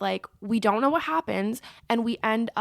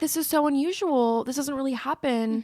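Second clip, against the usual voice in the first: usual speaking voice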